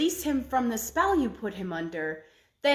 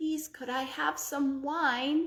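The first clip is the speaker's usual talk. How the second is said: feeble, faked weak voice, as weak as possible; 3 semitones higher, 3 dB quieter than usual. The Sultan, lying there, speaking to the ogress; feigned weak voice. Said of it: "made his voice sound as weak as he possibly could".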